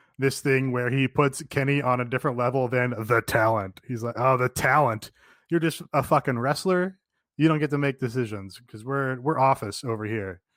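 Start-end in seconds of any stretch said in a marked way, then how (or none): none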